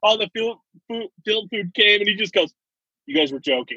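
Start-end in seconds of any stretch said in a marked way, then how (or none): 3.1-3.8 put-on thick backwoods Georgia accent. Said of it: "he had the thick accent and everything".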